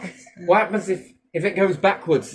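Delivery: ordinary talk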